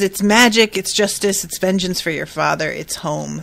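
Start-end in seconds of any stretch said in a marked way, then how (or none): none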